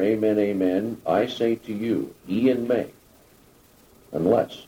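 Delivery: ordinary delivery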